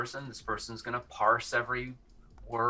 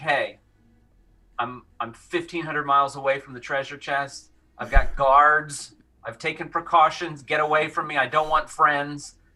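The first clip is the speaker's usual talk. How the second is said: very loud, play-acted grumpy, cranky rant; 3 semitones higher, 8 dB louder than usual. Retelling what he said to well-wishers: imitating a cranky man. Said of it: "he was kinda cranky".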